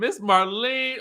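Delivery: acted-out mild, high scream. Retelling a reaction on hearing Miss Marlene's line: retelling own scream. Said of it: "I screamed".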